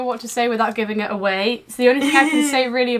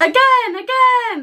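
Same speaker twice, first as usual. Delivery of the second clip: goofy, silly voice, very high pitch; 11 semitones higher, 3 dB louder than usual. Reading a first line aloud to another speaker: silly voice. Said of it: "In that silly voice of yours".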